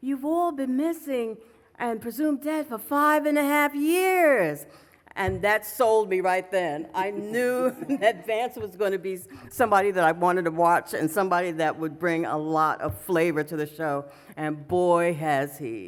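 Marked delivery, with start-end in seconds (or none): 0.0-4.7 put-on New York accent, higher. Act out Vance explaining to everybody at the airport what happened, in Vance's New York accent. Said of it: "he said in his New York accent".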